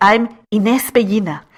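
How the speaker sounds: name said with a Spanish accent. Podcast host introducing herself, saying her name in a Spanish-inflected accent. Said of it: "I'm saying my name in such a Spanish inflected accent".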